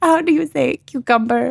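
practiced, put-on Spanish accent. Mimicking a woman from a book to the others, in a put-on spanish accent. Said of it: "she's like practicing her Spanish accent".

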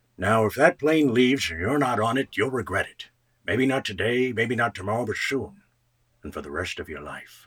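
put-on low, hushed old man voice from the forties. Recalling an impression done as a teenager, an old 1940s man impression. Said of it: "an impression of an old man from the 40s".

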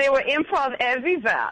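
put-on German accent. Joking about a group of pranksters, a line in put-on German accent. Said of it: "That's my German accent".

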